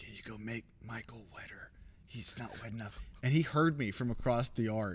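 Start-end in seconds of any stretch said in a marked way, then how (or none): 0.0-3.0 hushed, very quiet, soft aside. Retelling an aside to the makeup woman beside them, said very quietly. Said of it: "I said very quietly to the makeup woman".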